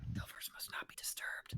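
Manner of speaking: barely-there, faint, breathy whisper. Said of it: "kinda whispering".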